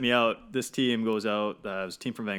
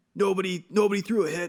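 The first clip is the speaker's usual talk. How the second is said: put-on coach screaming, much higher, slower; 10 semitones higher, 5 dB louder than usual. Retelling the coach screaming at the team; imitating a coach screaming. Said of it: "he's screaming at the team".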